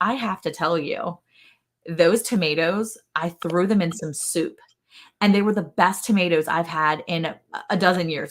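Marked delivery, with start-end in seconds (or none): none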